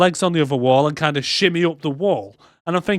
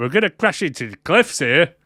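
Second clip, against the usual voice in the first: put-on Scottish accent. Retelling what the Scottish sea mate said, in his Scottish accent. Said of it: "In his Scottish accent".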